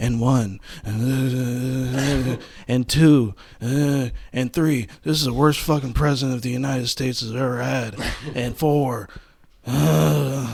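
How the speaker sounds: put-on voice of an old politician. Showing the others a Biden impression: Joe Biden impression. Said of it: "I can do a great Biden impression".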